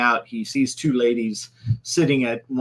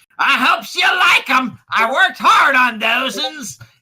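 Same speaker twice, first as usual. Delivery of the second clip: put-on very high, raised holler in toothless old-man voice; 14 semitones higher, 7 dB louder than usual. Voicing a cook calling to the players from the kitchen: old man yelling. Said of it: "someone yell from the kitchen".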